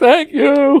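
play-acted, teary, very high crying voice. Retelling a woman's reaction to strangers clapping for her, imitating her crying. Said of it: "the woman starts crying".

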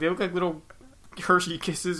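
usual speaking voice

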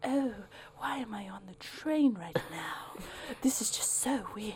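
affected, wealthy woman's voice. Acting out a rich lady on the train: rich lady voice. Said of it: "a rich lady kind of thing".

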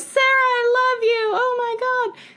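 put-on, very high, stretched, drawn-out fan shriek. Retelling how a concert companion kept yelling from far back: imitating someone screaming.

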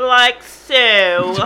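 loud put-on Valley Girl voice, drawn-out "so". Joking around in conversation before getting serious, in a Valley Girl voice. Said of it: "Please do not Valley Girl it".

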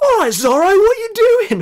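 very high-pitched, loud shouted call. Recounting a film scene where a man with a sword interrupts, retelling a shout. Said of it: "and he shouts".

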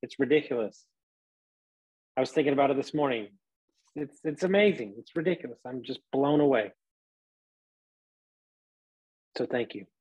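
heartfelt, deeply touched, moved, emotional voice. Thanking listeners at the end of an episode, emotional, moved voice. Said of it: "I'm emotional".

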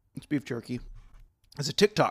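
slow, chewing speech with mouth full. Introducing the next clip while eating beef jerky: chewing while talking. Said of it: "I'm chewing into the mic".

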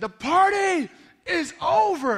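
very high, very loud, drawn-out preacher-voice scream. Retelling how a preacher kept screaming at the crowd: imitating a preacher screaming. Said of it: "he kept screaming".

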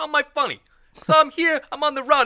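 very high, loud, pushed-out wiseguy mafia voice. Trying out a mafia voice like in Goodfellas: Joe Pesci mafia voice. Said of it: "He's just like".

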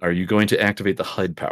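plain

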